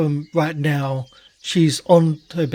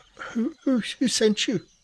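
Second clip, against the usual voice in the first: put-on high, cracking teenage boy voice with stammering; 8 semitones higher, 5 dB quieter than usual. Voicing a lanky teenage boy answering the door: voice almost breaking, cracking now and then. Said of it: "the voice that's almost breaking".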